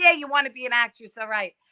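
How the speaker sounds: put-on New York accent. Recalling how their mom and managers talk in new york, new york accent. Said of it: "how they all talk like this in New York".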